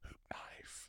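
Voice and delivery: acted excited whispering. Retelling what you whispered to yourself in the shower, retelling an excited whisper. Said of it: "I immediately whisper to myself excitedly".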